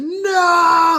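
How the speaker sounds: very high, stretched-out screamed "no". Retelling the moment grandma turned off the monitor: imitating own past screaming. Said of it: "I remember screaming".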